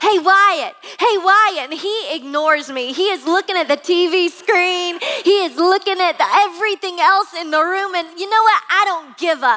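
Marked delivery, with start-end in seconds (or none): 0.0-1.7 mock, reenacted yelling. Parent retelling yelling at a son who ignores them, reenacting a yell. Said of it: "and I'm just 3 feet away and I'm yelling".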